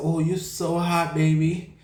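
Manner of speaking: slow, drawn-out twink voice. Retelling what a shirtless guy said on the street: imitating the twink's voice. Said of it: "He sounded just like that".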